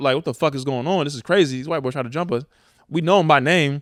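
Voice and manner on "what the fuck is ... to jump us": mock-agitated, worked-up tone. Retelling complaining to the parents after the fight: retelling being worked up. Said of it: "I'm turned up".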